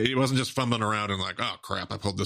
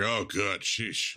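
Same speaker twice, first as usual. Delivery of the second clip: put-on eager, glad, excited, relieved little exclamation. Imitating a cohost's reaction to skipped self-examination questions: imitating Brent being excited. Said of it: "Brent is so excited right now".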